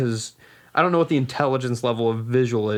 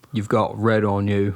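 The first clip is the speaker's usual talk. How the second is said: put-on southern drawl; 3 semitones lower than usual. Quoting a movie line, the speaker's voice drifts into a Forrest Gump-like voice. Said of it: "Why is it getting Forrest Gumpy already?".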